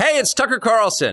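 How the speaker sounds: high, loud yelling. Opening a Twitter video that makes an announcement about his future, he is yelling. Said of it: "why are you always yelling at me?".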